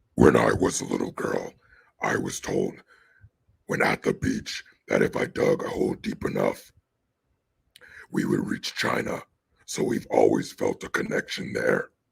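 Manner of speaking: very low, creaky, croaking demon voice. Quoting a woman mockingly, doing her words in a liver-spotted demon voice. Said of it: "let me do this in her liver spotted demon voice".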